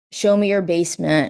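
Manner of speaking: imitated stern, angry voice. Speaker retells a police officer's words to a woman, retelling an angry, stern order. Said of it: "being angry and very stern".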